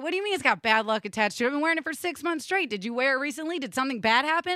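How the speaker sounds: plain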